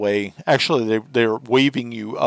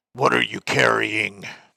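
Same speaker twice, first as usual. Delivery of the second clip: gruff, rough hobgoblin voice called out. Voicing a hobgoblin guard questioning the players' wagon: gruff call. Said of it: "gruffly, um, calls out and says".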